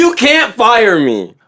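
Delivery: slow, emphatic, insistent, angry defiance. Retelling what a man did in a store aisle, imitating his scream. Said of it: "he's screaming".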